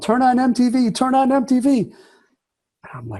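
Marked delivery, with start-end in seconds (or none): 0.0-1.8 shrill, very high-pitched screaming. Retelling a friend's late-night phone call: imitating a friend screaming. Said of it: "he's screaming in the phone".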